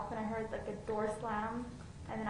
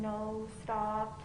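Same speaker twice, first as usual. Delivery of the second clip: normal talking voice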